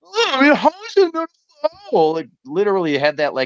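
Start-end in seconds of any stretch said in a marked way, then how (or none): 0.2-2.2 put-on very high, swooping, childish little-kid whine. Retelling how a broadcaster complained about a no call: imitating someone whining. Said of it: "literally whining over".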